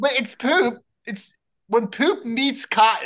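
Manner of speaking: English accent laid on for show. During a group conversation, one speaker switches into an English accent. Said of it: "He just used the English accent".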